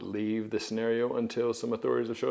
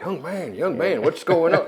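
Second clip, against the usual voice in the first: very loud, high-pitched holler; 7 semitones higher, 9 dB louder than usual. Retelling a bike crash, shouting through a driver's window: imitating own yelling.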